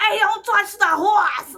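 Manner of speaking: put-on shrill, high Boston accent yell. Retelling what a passing driver shouted: imitating a boston accent. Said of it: "that guy drove by and was like".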